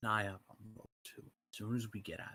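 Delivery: very quiet whisper. A player leans in to secretly tell another player's character something, whispering. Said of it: "Whispering so quiet I can't hear you".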